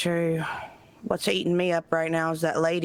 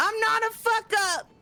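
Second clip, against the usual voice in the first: raised, louder, shrill, very high-pitched voice. Repeating a line when asked to say it louder: louder. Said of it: "A little louder".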